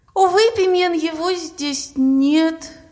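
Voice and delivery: words forced out with effort. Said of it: "выдавила я".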